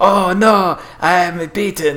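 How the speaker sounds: wooden, stilted, very slow bad voice acting. Retelling a scene with a Buddhist monk, imitating his really bad voice acting. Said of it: "he has this really bad voice actor".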